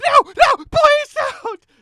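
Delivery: very high, loud, voice-cracking shriek. Retelling what a pinned-down man screamed, imitating a cracking scream. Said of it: "he basically screams like it's it's like a like a cracking".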